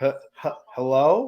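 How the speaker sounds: stammering hello with rising, questioning intonation. Imitating someone saying hello like a question: imitating a hello said like a question. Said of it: "say hello like it was a question".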